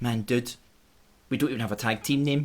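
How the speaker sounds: normal talking voice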